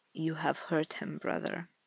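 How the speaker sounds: cold. Confronting his brother for hurting someone, cold. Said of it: "his voice is cold".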